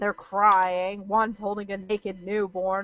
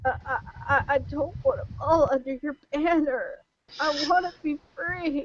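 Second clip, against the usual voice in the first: high, whimpering, stammering voice; 7 semitones higher than usual. A game narrator voices a man being threatened with the torch, whimpering. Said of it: "He he whimpers and he goes".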